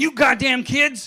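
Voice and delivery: very loud high yell. Retelling yelling at the kids with the windows open: imitating himself yelling at kids. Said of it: "I was yelling at 'em today".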